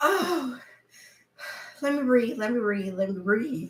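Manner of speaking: crying with laughter. Talking to listeners with a guest beside her, crying with laughter. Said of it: "we over here crying".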